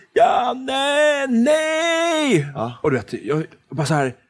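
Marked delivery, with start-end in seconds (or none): 0.2-2.5 acted, very high, full-volume shriek, long nej. Retelling how the speaker's mother screamed the little brother's name: imitating a mother screaming. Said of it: "min mamma stod och skrek det högsta".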